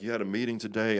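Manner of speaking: mock frantic, upset, losing-it outburst. Retelling a heated phone call with a colleague, acting out the moment of losing control. imitating a frantic outburst. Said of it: "And I lose my mind".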